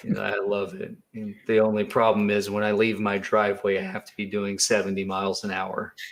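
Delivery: flat monotone delivery. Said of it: "like, really monotone".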